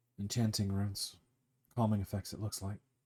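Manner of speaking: discreet, low, quick, hushed undertone. A game master voices a character pointing out runes so no one else hears: really low voice. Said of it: "He says it in a really low voice".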